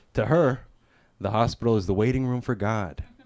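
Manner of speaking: ordinary talk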